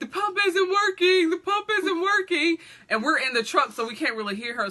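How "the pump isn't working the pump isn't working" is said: very high-pitched, urgent shouting. Retelling a woman at the pump yelling to the crew in the truck, retelling a yell. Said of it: "she supposedly yells".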